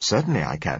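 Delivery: ordinary delivery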